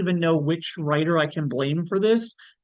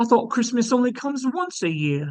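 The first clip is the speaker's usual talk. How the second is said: really bad, high-pitched put-on British accent; 5 semitones higher than usual. Quoting a movie's final line, bad high British accent. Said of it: "that was a really bad like Brit like that was like a like high Brit- British accent".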